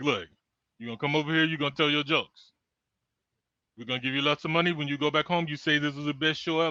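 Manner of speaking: put-on, imitated Arabic accent. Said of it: "how you did that accent".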